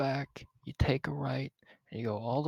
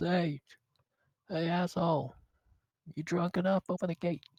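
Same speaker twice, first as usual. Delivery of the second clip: voice called out, calling upward; 3 semitones higher than usual. The guy turns around to get the gate opened, shouting up. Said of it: "the guy just turns around and shouts".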